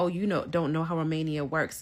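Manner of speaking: ordinary delivery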